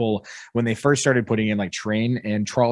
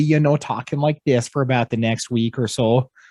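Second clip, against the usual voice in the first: put-on Minnesota accent, much higher pitch; 3 semitones higher, 3 dB louder than usual. Describing how their mom talks after visiting family in Minnesota, in a put-on Minnesotan accent. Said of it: "her Minnesotan accent comes out really bad".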